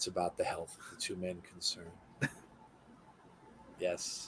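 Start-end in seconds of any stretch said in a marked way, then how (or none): 0.0-1.9 put-on hushed voice, much quieter. Mocking how they talk when someone gets hurt in a match, imitating a hushed quiet voice. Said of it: "when they get all quiet like this".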